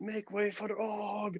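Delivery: high, hushed, very quiet half-whisper. A game master voicing a big orc diving down a grate, half-whispering. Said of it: "Og just whispers".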